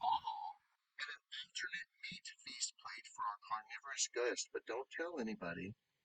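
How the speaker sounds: very quiet, breathy, leaning-in whisper, barely voiced. Voicing a character who leans forward to the guests, whispering. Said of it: "she leans forward and she whispers".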